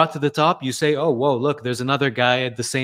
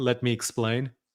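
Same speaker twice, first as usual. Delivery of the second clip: put-on South African accent, quieter; 6 dB quieter than usual. Describing a fitness influencer to another speaker: Joel impression, South African accent. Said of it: "the South African accent".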